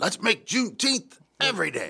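sermon-like, preachy delivery, pitched way up. Retelling what an alderman said at Juneteenth: imitating Tim Kelly sounding like a preacher. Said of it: "he sounded like a preacher when he said it".

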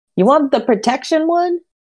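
high-pitched voice of someone hard of hearing. Acting out what she will say, imitating someone speaking really loudly. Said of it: "she's going to say really loudly".

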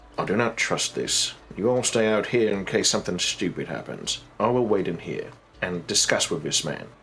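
very quiet, low, hushed aside. In character, turning to everyone else before going in, saying it very quietly. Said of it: "very quietly say".

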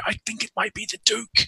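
stage whisper. Voicing a character pressed against a wall by a door: loud whisper. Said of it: "in the sort of loud whisper".

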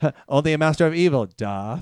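mocking, snide, rude little dig. Retelling a film scene, imitating Obi-Wan being snide. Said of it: "he's just being, like, an asshole to him".

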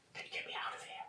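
very quiet, breathy, barely voiced whisper. Mid-battle, the game master voices a character addressing a player: whispering. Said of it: "And then he whispers".

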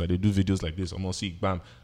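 ordinary talk

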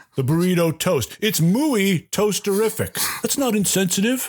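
put-on infomercial announcer voice. Pitching the burrito toast in a comedy sketch, fake infomercial announcer. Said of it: "The burrito toast. The burrito toast. Why go to the trouble of wrapping your meat, cheese, beans, and other condiments in a tortilla when you can just spread them on a nice piece of toast? That's a tostada, you say?".

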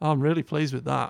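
put-on insincere, ungenuine complimenting tone. Retelling how a coworker praised work: imitating a coworker's insincere-sounding praise. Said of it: "It would always sound really terrible".

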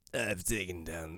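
low, soft-spoken character voice. Asked to try a quote in the character's voice, then giving up, Cad Bane voice. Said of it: "Try it with the Cad Bane voice".

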